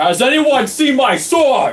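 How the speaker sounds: high, slow, loud shout.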